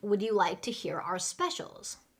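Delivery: ordinary talk, nothing marked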